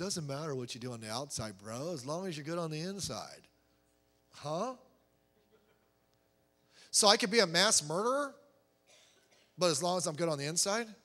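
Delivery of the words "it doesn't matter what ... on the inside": very quiet, low, laid-back surfer-dude voice. Mocking how some Christians defend sinful actions, in a surfer voice. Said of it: "they get their surfer voice".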